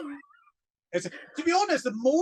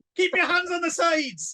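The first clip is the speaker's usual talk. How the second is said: loud, high-pitched shouting. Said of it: "some man shouting".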